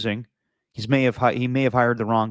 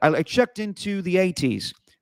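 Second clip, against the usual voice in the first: put-on British accent, higher; 8 semitones higher than usual. Quoting a movie line in a put-on voice: Austin Powers impression. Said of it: "In the words of Austin Powers".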